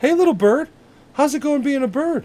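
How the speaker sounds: put-on very high comic voice. Retelling a comedy skit where Mark Wahlberg talks to animals: Mark Wahlberg impression. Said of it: "Mark Wahlberg talks to animals".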